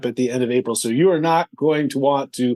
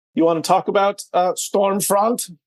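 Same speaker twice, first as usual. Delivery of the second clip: put-on German accent, much higher pitch; 6 semitones higher than usual. Podcast co-host raising the next agenda item, in a German accent. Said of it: "That was my German accent right there".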